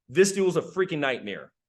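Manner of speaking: ordinary talk, nothing marked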